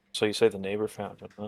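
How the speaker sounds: hushed, quiet, under-the-breath voice. Leaning in toward a drunk guy at the bar: quiet voice. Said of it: "In, like, a quiet voice".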